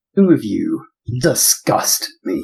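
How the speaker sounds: grand villain voice. Voicing a character who addresses two others, in a booming voice. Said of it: "a booming voice".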